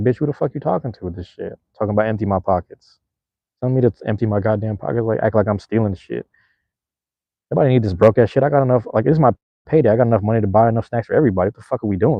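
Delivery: play-acted, very sassy, mouthy rant. Retelling how a friend answered a store worker: imitating a friend talking sassily. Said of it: "he started talking in a very sassy way".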